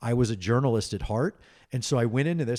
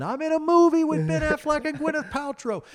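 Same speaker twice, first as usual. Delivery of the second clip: mock, very high, pumped-up, excited yell; 4 dB louder than usual. Retelling yelling from the top of the Sears Tower: retelling a yell. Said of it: "and I'm yelling".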